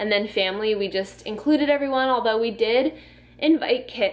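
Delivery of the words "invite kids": voice breaking, cracking mid-phrase. Speaker explaining who was invited to their wedding, voice cracking. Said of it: "my voice just cracked".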